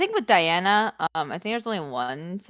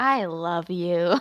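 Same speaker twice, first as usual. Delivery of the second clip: sleepy, affectionate, loving delivery; 3 semitones lower than usual. An actor trying out a line on request, sleepy and lovey. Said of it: "how do I sound sleepy and lovey?".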